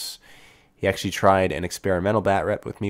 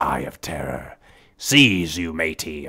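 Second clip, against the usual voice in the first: very slow, drawn-out pirate voice; 3 semitones lower than usual. Suggesting a comment for viewers to leave: talking like a pirate. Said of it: "I don't know why I'm speaking like a pirate".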